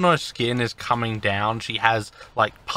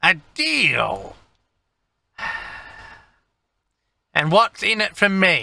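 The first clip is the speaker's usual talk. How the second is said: put-on curt, impatient, high-pitched character voice; 7 semitones higher than usual. A game master voices the shop's owner, who is asked for a deal: impatient woman character voice. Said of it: "She looks up at you. Take it, you are the owner of this fine establishment. Owner! Worker! Spent way too long here. Anyway, what do you want? And she's looking at you. Like, and she moves her nose, her long".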